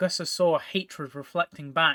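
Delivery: plain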